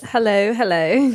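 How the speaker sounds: fake, put-on British accent. Starting the show bit with a partner, speaking in a fake British accent. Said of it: "our fake British accents".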